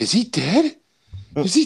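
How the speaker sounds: put-on small child's voice, high and slow, starting to crack. Retelling a little kid asking a question at a movie: imitating a kid's voice breaking. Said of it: "voice starts, like, you know, breaking".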